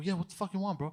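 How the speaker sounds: put-on angry voice. Retelling confronting a staring stranger: imitating an angry retort. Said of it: "So I'm getting very angry".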